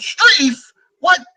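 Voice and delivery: very high, loud, excited yell. Imitating people yelling a lineman's name in disbelief: Jim Moore playoff voice. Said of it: "in a Jim Moore playoff kind of voice".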